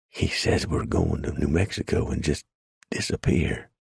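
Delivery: low, hushed, whispery voice. Narrating a woman speaking privately, out of earshot, in a low, whispery voice. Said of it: "Ruth still talked in a low, whispery voice".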